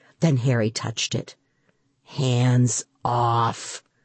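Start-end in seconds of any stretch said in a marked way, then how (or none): 2.0-3.8 muttering, much lower pitch. The narrator speaks to Harry, who touched the cape, muttering. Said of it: "I muttered".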